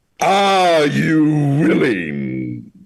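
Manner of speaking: loud, swooping, menacing, large booming voice. Narrating a figure approaching you, voicing him in a large booming intimidating voice. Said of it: "he booms".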